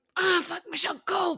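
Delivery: put-on, high, groaning, straining, effortful grunting yell. Recalling yelling at herself on the treadmill: retelling grunting and groaning. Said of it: "I'm like grunting and groaning".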